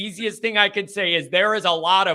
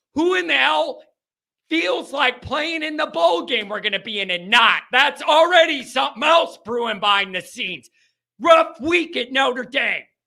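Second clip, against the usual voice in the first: frustrated shouting, higher; 5 semitones higher than usual. Complaining about players leaving through the transfer portal: yelling in frustration. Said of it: "I wasn't yelling at you".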